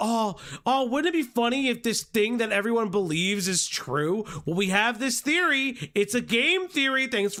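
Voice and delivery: snide, put-on naive, faux-innocent wondering. Mocking how some accusers talk about a theory: mocking imitation of accusers. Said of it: "They straight up sound like the Turkey Tom accusers, where they're just like".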